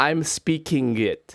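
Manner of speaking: Japanese accent with textbook-learned English. Showing how a Japanese person who learned English from textbooks would say it, Japanese textbook-English accent. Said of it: "This is how they would sound".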